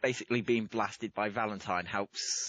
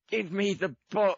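very high, loud, shrill yell; 11 semitones higher, 6 dB louder than usual. Declaring a character grabs Ash by the neck: yelling at Ash. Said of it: "And just yell".

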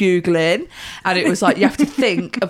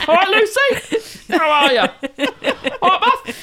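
put-on older man voice, pitched higher; 11 semitones higher than usual. Imitating how Uncle Roy greets people: Uncle Roy voice. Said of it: "His voice uh, is like this".

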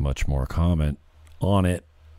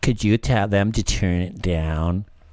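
put-on entitled complaining voice; 3 semitones higher than usual. Retelling a woman asking security to have it turned down, Karen voice. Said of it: "Is that a good Karen voice?".

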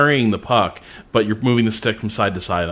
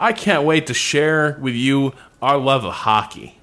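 eager, polite, enthusiastic, pitched-up Canadian coach voice; 4 semitones higher than usual. Retelling what a tutorial coach says: imitating an enthusiastic Canadian coach. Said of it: "a really enthusiastic Canadian guy is like".

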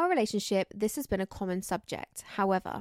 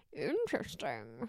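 very low, deep pitch on interesting; 7 semitones lower, 7 dB quieter than usual. Saying one word and noticing it sounds like the Grinch. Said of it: "why do I sound like the Grinch?".

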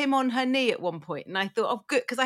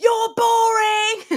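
put-on taunting child voice, higher and louder; 10 semitones higher, 9 dB louder than usual. Retelling how a four-year-old answers being told off: imitating a child telling her off. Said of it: "he just stands in my face and goes".

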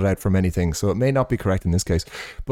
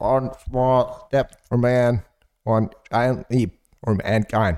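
very slow, halting, garbled mimicry of a recording sound; 3 semitones higher than usual. Retelling what a man says in a recording: imitating the original audio. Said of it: "that's my imitation of the full, of the actual audio".

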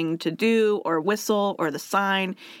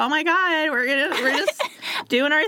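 put-on valley girl voice, higher pitch; 8 semitones higher than usual.

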